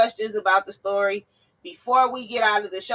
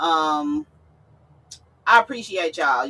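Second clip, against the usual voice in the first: on the edge of tears, choked up, holding together; 4 semitones lower than usual. Thanking viewers for supporting the show, emotional, nearly choked up. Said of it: "trying to just get through this without, like, getting choked up".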